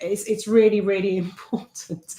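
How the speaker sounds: laughing through words while talking. Stressing that a point matters while laughing while talking. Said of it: "I'm laughing 'cause I've just seen".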